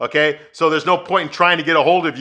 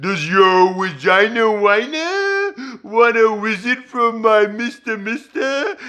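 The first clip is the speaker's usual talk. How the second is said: very slow, high, swooping, drawn-out cartoon voice; 5 semitones higher than usual. Retelling a scene from a show: imitating Elmer Fudd voice. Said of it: "talking to her in an Elmer Fudd voice".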